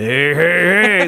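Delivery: put-on cartoon voice. Explaining what the voice in the clip was, doing the Fat Albert laugh. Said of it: "It's the Fat Albert laugh".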